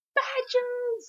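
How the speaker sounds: very high-pitched excited squeal. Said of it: "he gets all excited".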